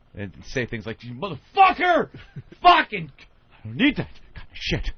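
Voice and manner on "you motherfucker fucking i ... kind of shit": mock, loud, unhinged crazy-guy ranting to himself. Retelling acting crazy whenever a man came down the street, retelling loud crazy-guy rant. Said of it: "talking to myself all loud".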